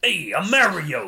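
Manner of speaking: put-on strong New York accent. Describing an early Mario voice: Captain Lou Albano's New Yorker accent. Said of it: "this big, thick New Yorker accent".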